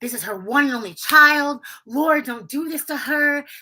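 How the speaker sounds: high, pleading, imploring, begging cry. Retelling an auntie's prayer in the background: imitating someone pleading in prayer. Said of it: "really just begging, pleading".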